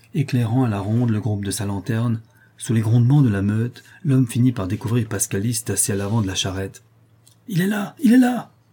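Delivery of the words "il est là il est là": shrill, very high, loud shouting. On finding Pascalis at the front of the cart, shouting. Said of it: "crièrent".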